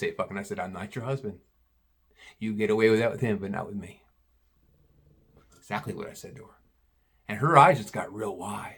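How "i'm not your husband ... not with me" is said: soft-spoken and quiet, lower and quieter. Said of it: "Soft enough for no one to hear".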